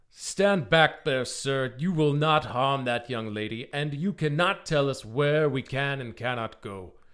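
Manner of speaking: loud, slow, stern, commanding tone.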